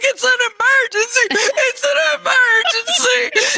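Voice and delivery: high, drawn-out sobbing, words barely coming out. Retelling an emergency call to the doctor's secretary, reenacting crying so hard. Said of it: "I'm crying so hard".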